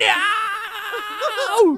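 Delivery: shrill, full-volume, very loud high-pitched shriek. Telling how he came out from behind the wall anyway, retelling a scream. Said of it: "and I'm just screaming".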